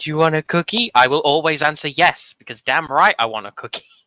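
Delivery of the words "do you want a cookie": condescending, patronizing, talking-down tone. Quoting what it says to the speaker: mock-condescending. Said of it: "It says to me like condescendingly".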